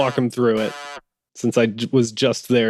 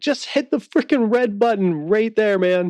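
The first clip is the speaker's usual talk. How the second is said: put-on, shrill, very high-pitched screaming; 10 semitones higher than usual. Playing a character in a crisis, screaming at Cham: screaming at someone. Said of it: "I'm screaming at Cham".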